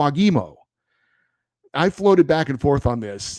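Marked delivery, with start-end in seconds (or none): 0.0-0.5 Foggimo said with stress on second syllable gi. Relaying how a team's communications manager texted the name, stress on second syllable of foggimo. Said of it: "with the emphasis on the second syllable".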